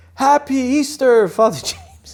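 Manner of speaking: very loud, very high-pitched, drawn-out call. Retelling how a man greeted him after the Good Friday liturgy, very loud. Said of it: "he said in a very loud voice".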